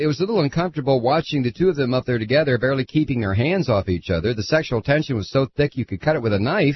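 ordinary delivery

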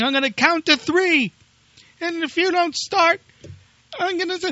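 mock apoplectic screaming, very high-pitched and furious. Retelling a furious man threatening his car if it won't start; retelling a scream at a car.

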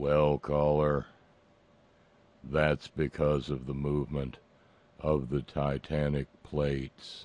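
deep, utterly flat, unvaried monotone. Retelling the reply given to a caller: profound monotone. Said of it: "America's most profound monotone replied".

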